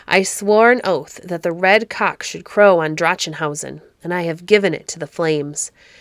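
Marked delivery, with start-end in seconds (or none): none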